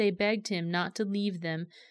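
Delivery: ordinary delivery, nothing marked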